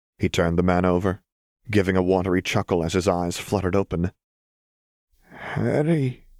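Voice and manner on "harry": labored, high wheeze with breath catching. Narrating William, just cut down, saying Harry's name, wheezing. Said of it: "he wheezed".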